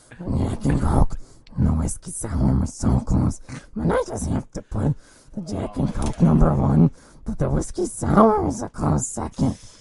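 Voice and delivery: very low, rough, creaky, swooping character growl. Ranking drinks after being told to use a straight voice: Gollum voice. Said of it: "Continue, Gollum".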